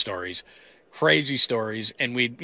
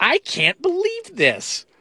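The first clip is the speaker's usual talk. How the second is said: very high, very slow, swooping sing-song mom voice; 4 dB louder than usual. Retelling what mom said on the mic in the studio: imitating mom. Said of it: "It's my best mom impersonation".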